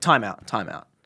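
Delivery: put-on schoolteacher tone, taking charge. Retelling own words on a sales call: imitating a school teacher. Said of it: "as if you're the school teacher".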